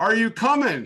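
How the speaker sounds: high, loud, impatient call.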